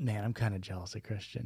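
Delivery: muttering under breath. Retelling own past remark to a partner: muttering under breath. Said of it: "I said under my breath".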